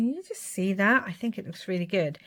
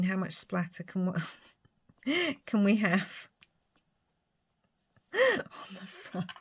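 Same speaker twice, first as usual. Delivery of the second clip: talking through laughter, quieter; 5 dB quieter than usual. Adding silver splatter to a craft piece: laughing while talking. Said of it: "I'm making myself laugh".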